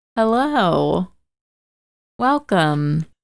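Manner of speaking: put-on mechanical, robotic, automated recorded announcer voice. A podcast host opening the show greets listeners in an AT&T robotic phone voice. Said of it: "You sound like one of those robotic voices".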